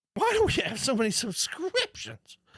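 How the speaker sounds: very high-pitched, swooping put-on voice. Describing a man's reaction to Erin's Apple stuff, the speaker imitates his high-pitched voice. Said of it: "he's got this real high pitched voice".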